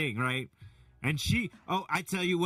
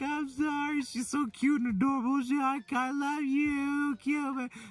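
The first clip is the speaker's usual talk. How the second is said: put-on very high, sweet little girl voice. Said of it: "she's like".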